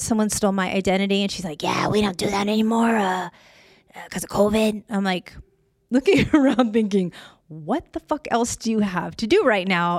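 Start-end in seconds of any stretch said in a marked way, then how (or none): 1.6-4.8 put-on heavy chain-smoker's voice. Retelling a woman's answer when you tried to file a police report, imitating a woman's smoker voice. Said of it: "She has a super kind of smoker voice".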